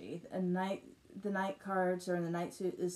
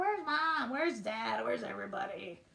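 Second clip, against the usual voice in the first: mock small child's screaming, calling-out voice; 4 semitones higher than usual. Ending a live chat, retelling the daughter downstairs, imitating Morgan screaming. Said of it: "screaming at the top of her lungs".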